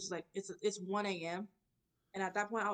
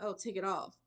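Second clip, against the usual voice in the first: ordinary talk, nothing marked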